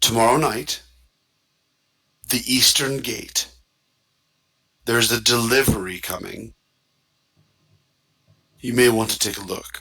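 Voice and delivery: hushed whisper. As game master, voicing a vampire who turns to Glyph and offers information, whispering. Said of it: "he turns and whispers to you".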